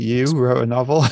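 mock dismissive disbelief, eye-rolling manner. Imagining how the old English teacher would react: imitating an eye-rolling teacher. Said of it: "he would roll his eyes and go".

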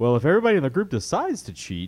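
animated put-on impersonation voice with swooping pitch. Explaining deciding to cheat to win, in a Brian impression. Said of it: "let me do my proper Brian voice".

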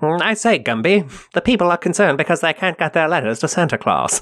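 clipped mid-Atlantic newscaster tones. Describing a cartoon pair, doing Pokey as a clipped newscaster. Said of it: "like a mid-Atlantic newscaster who's like".

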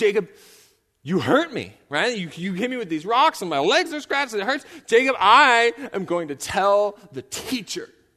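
put-on weepy, tearful, wounded child-like complaint. Telling how a girl turned to him wiping tears, imitating her tearful complaint. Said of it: "she kind of wipes tears out of her eyes".

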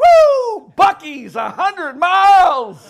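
play-acted very loud, high thrilled cheer, stretched woo. Describing a car ride, acting out a passenger spotting a highway sign, retelling an excited shout. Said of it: "Everybody gets excited".

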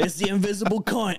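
put-on Australian dad accent.

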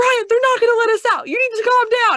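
panicked yelling, very high, loud and fast. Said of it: "And I'm like".

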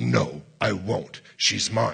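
rough, low, guttural demon voice. Retelling a possessed woman's reply to the command to come out; low guttural voice. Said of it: "in this low guttural voice".

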